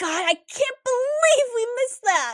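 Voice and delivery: groaning, very high-pitched delivery. Luz reacts to Willow's story: groaning. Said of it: "Luz groaned".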